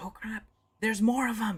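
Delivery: in a whisper. Voicing a character who speaks quietly to a player: whispering. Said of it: "Toppip whispers to you and says".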